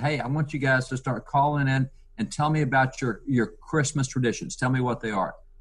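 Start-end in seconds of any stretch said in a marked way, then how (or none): none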